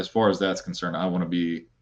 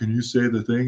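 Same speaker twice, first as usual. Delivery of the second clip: normal talking voice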